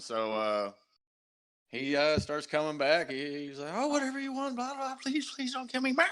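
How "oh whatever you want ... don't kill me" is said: very high, cringing, cowering goblin voice, begging tone. Voicing a captured goblin who begs the players not to kill him: cowering, begging goblin. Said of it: "cowering and everything".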